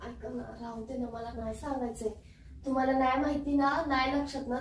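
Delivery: very soft, hurt, sulky brush-off.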